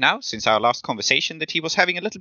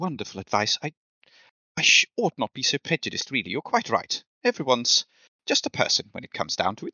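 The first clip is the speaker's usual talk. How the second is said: low, hushed, dropped voice; 2 semitones lower, 5 dB quieter than usual. As the snake turns back towards the chessboard, turn to Joan and answer her advice in a low voice. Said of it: "in a low voice say".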